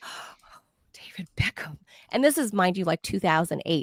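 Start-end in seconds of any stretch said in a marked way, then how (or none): 0.0-1.8 breathless, breathy swooning whisper, very soft. Recalling reporters seeing a famous man walk into a press huddle, mock swooning.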